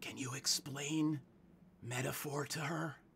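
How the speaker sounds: loud, giant stage whisper. Voicing a character who asks a companion to explain something: loud stage whisper. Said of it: "in a very loud, giant whisper".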